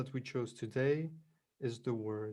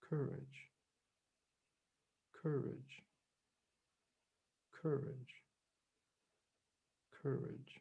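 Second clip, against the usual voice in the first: gentle, effortless, soft and quieter voice; 7 dB quieter than usual. Meditation guide inviting listeners to repeat the word more softly: softer. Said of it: "say it softer".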